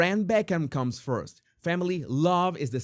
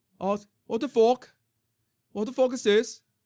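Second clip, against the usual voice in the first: clumsy put-on Liverpool accent, pitched up; 8 semitones higher than usual. Reacting to a mother's refusal in the story, bad liverpool accent. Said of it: "this deserves a Liverpool accent".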